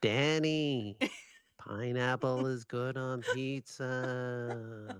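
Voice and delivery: very slow, drawn-out voice, pizza stretched long. Retelling waking to someone trying to convince them: imitating Krem. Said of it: "I can just hear this voice going".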